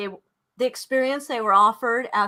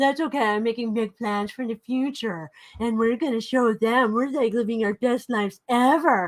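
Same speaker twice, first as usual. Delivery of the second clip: mocking, put-on dumb-sounding voice. Imitating a man annoyed about an event: mocking dumb voice. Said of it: "He talks like a dummy".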